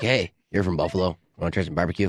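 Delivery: shady sales-pitch voice, like a drug dealer. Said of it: "is that what this is?".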